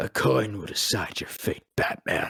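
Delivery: whispered, threatening villain voice. Retelling being asked to voice a game villain, in a Two-Face voice. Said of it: "I need you to do Two-Face".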